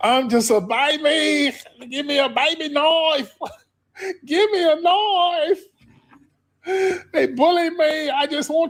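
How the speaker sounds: play-acted very high blubbering sobs, "baby" stretched. Imitating a boy's crying video about being bullied: mock crying. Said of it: "he did all that crying".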